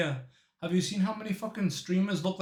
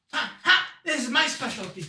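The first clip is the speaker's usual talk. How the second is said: put-on high-pitched child voice; 7 semitones higher, 4 dB louder than usual. Acting out an imagined zombie-apocalypse family member: acting out the kid with the staff. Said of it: "and he's like".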